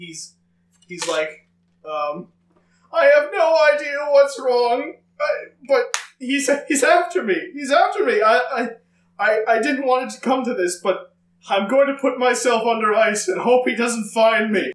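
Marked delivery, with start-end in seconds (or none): 1.9-14.7 frantic, panicked wizard voice, much higher pitch. Narrating a quest, voicing a wizard seen in an illusory plate, frantic wizard voice. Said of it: "he's quite frantic".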